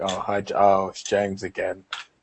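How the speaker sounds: mock disappointed, small let-down voice. Teasing the co-host about how he says hello, imitating James's disappointed hello. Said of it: "You always sound really disappointed when you say hello".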